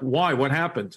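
feigned, put-on clueless, playing-dumb tone. Retelling answering the principal after being expelled: retelling own playing dumb. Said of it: "like playing dumb, like I forgot".

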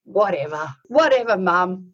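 put-on grown man voice. Retelling a grown son's reply to his mother: imitating her grown son. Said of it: "And you know what he did".

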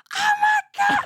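mock screaming in excitement. Retelling hearing the show while driving to work: retelling screaming in excitement. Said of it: "screaming by myself in my car".

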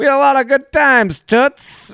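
put-on high, loud, old-timey 1930s man voice. Joking with the other speaker, this speaker says a line in a 1930s guy voice. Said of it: "like a guy from, a thir- from the 30s".

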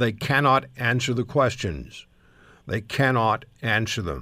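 usual speaking voice

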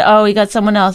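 ordinary talk

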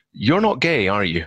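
put-on very strong, heavy Welsh accent, laid on thick. Recounting a man walking up to him, the speaker quotes him in a very Welsh accent. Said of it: "in a very Welsh accent".

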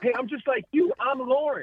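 very high, loud hollered yell. Retelling a stranger calling from three checkout aisles away: imitating a man yelling. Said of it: "started yelling".

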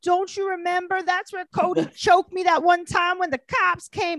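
shrill, very high voice. Retelling how Rachel refused to give up the couch: imitating Rachel. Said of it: "And Rachel's like".

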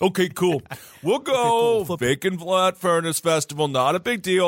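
horrible, bad put-on Philadelphia accent. Speaker mimics Philadelphians reacting to a festival name; horrible Philadelphia accent. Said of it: "That's a horrible accent".

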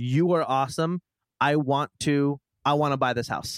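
normal talking voice

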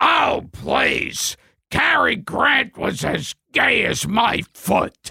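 put-on angry old man voice. Retelling a talk show moment, imitating Mickey Rooney angry. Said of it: "And Mickey Rooney gets angry".

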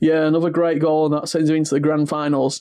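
plain

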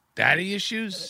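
put-on puzzled, baffled, quizzical voice. Acting out Donald Trump reading an award envelope: put-on quizzical Donald Trump voice. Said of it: "he says with a quizzical tone to his voice".

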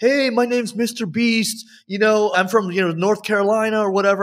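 mock, parodied intro announcer voice.

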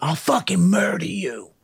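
heated, angry put-on voice. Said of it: "we kept getting angrier and angrier".

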